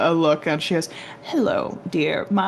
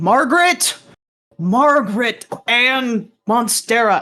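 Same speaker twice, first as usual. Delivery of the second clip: high, carrying, far-reaching shout; 5 semitones higher, 4 dB louder than usual. Voicing a character calling a name across the dining hall: shouting across a hall. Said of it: "a voice kind of shouting across the dining hall".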